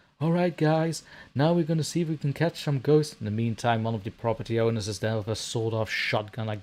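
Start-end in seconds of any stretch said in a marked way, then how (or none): 0.2-3.2 eager, raised, pitched-up voice. Imitating ghost hunters who climb a fence: imitating a ghost hunter. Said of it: "ghost hunters climbed over the fence and be like".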